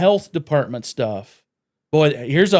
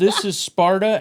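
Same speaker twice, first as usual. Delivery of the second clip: half-hearted put-on scream, yelped, pitched up; 5 semitones higher than usual. Retelling how she punted a vendor's water bucket: imitating a scream.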